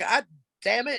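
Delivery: put-on yelling. Retelling a phone call with bad reception: imitating someone yelling. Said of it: "And he's yelling at me".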